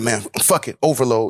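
normal talking voice

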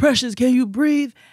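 mock shrill yell, pitched very high. Retelling other kids calling out to a girl: imitating someone yelling. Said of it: "They yell".

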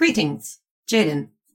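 AI companion voice. Voicing the AI Polly reporting a failed search: voicing Polly the AI. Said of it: "Polly, like, bobs and flashes and goes".

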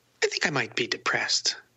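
play-acted, casual, offhand, cavalier throwaway tone. Retelling a friend's remark at breakfast: imitating a cavalier tone. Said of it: "he said it in a very cavalier kind of way".

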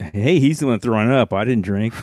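normal talking voice

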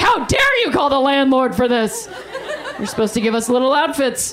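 put-on voice of many mice. Retelling hearing scratching, voicing mice coming after the speaker: put-on voice of the mice. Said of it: "it literally sounded like a parade of mice coming after me".

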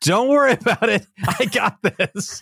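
put-on, very high, shouted voice. Recounting his smoking lawnmower, he re-enacts his reply from the yard: retelling his own yell back. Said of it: "So I just yelled back".

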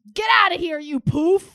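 loud, high-pitched shout. Testing whether a word is derogatory by yelling it, yelled. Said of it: "can you yell it at somebody and you feel bad about it?".

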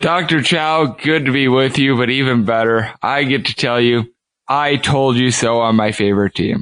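low, slightly downcast, somewhat depressed tone. A producer joining the show greets the host, sounding a little depressed. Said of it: "You sound a little depressed".

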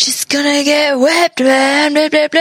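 laid-back surfer dude talk. Retelling a news interview with a surfer, doing a surfer dude impression. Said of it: "totally doing the surfer like impression".

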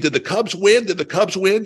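acted, shrill, high, loud, repeated insistent yell. Retelling how a lady in the stands kept asking: imitating someone yelling. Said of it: "she kept yelling at me".

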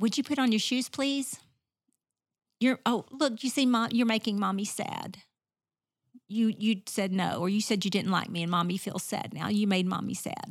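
meek, pleading, passive-sounding voice. Showing how a parent with a passive voice asks a child: passive parent voice. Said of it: "If I am a parent who has a passive voice".

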